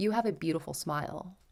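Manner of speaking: imitated whisper. Retelling what a man bent over and said: imitating a whisper. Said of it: "whispers to me".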